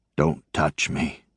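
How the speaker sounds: ragged, rough, whispering voice. Narrator voices a man hanging helplessly on a cross: ragged, whispery voice. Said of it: "in a ragged, whispery voice says".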